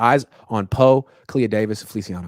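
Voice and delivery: ordinary talk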